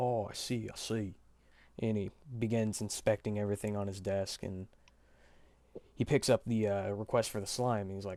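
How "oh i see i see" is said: very drawn-out, loud, slow put-on Australian accent. Storyteller voices a man inspecting a request on his desk, in an Australian accent. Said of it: "more Australian accent, dude".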